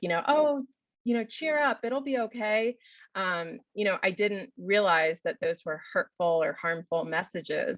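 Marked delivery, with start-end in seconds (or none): 0.3-2.8 high, upbeat, cheerful tone. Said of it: "it was helpful and upbeat to say".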